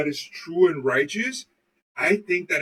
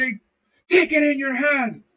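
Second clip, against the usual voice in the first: acted-out, high-pitched screaming; 7 semitones higher than usual. Retelling how a priest yelled at his dad, imitating a priest screaming. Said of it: "The priest screamed at him and said".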